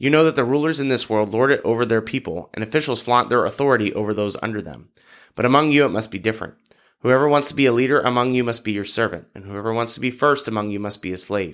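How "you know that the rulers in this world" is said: ordinary delivery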